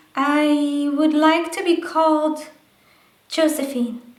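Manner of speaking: high-pitched puppet voice, the "I" stretched with pitch rising. Answering as a second puppet in the dialogue: Josephine puppet voice. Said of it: "And then they can talk to each other".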